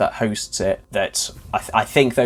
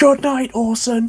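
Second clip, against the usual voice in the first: mock very high, loud, shrieking scream; 13 semitones higher, 5 dB louder than usual. Recounting a scene from a show, the speaker retells a character's scream. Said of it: "and then screams like".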